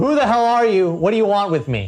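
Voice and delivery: furious, demanding, high, angry yell. Confronting someone the character does not know, yelling. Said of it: "was going to yell".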